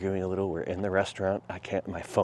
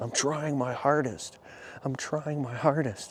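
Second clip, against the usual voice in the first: repeated self-pitying whine, pitched up; 7 semitones higher than usual. Retelling own past words to a friend: imitating own victim talk. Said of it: "Victim talk".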